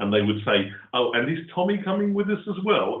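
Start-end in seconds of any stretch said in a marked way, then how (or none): 0.9-3.0 play-acted dry, gently teasing sarcasm, pitched up. Retelling how family teased about an invisible friend: imitating a slightly sarcastic tone. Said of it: "in a slightly sarcastic tone".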